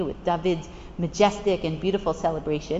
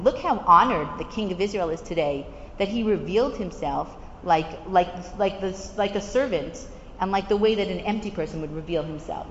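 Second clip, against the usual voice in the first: ordinary talk, nothing marked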